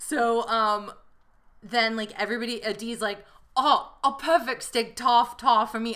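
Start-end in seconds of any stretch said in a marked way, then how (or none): 3.6-6.0 playful, fake, put-on British accent. Retelling what Dee ordered at dinner: imitating Dee in a British accent. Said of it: "it's so fun to do this accent".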